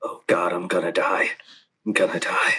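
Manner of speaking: muttered under the breath. Voicing a character's words that another overhears, muttering under breath. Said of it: "You hear under Edgar's breath".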